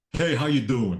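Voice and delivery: put-on New York accent. Telling a story about lost tourists, the speaker does a stereotypical New Yorker accent. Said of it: "the exact stereotypical New Yorker".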